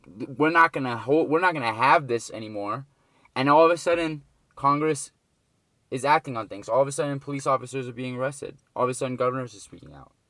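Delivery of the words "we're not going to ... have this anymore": ordinary talk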